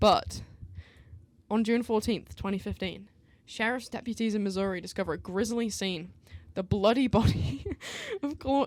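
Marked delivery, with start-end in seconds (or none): 6.5-8.7 laughing while speaking, high and swooping. Reading out a murder case summary, laughing while talking. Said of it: "I'm not laughing about the crime".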